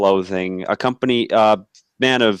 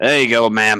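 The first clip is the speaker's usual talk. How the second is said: put-on American accent. Playing a man setting a drink down for a woman, in an American accent. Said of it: "He's speaking actually with an American accent".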